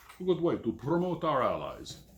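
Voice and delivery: very bad fake Ukrainian accent, swooping. Describing the options given, a line in a very bad fake ukrainian accent. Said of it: "that very bad fake Ukrainian accent".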